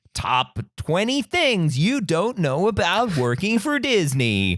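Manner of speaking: jabbing, mocking countdown announcer voice. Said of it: "The way you just said that was a very specific jab".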